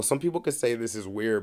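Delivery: ordinary talk, nothing marked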